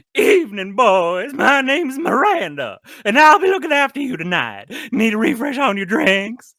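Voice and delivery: very high, loud, shrill, silly Southern belle voice. Asked for the other version, redoing the waitress's greeting to customers; sillier Miranda voice. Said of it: "The other one was much sillier".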